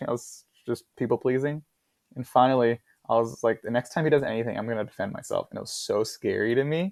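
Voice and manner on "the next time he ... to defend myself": plain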